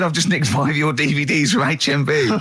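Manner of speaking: play-acted cheerful, gleeful, delighted tone. Retelling a stranger's boast about stealing DVDs: imitating a happy man. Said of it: "He was so happy with it".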